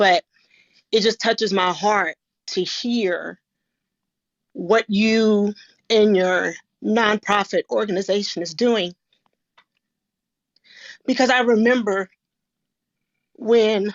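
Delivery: fighting off emotion, trying to stay composed. Thanking a guest speaker for their nonprofit's work, holding back emotion. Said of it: "I'm trying not to get emotional".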